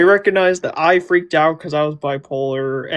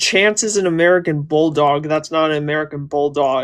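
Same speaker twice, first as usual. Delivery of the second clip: ordinary delivery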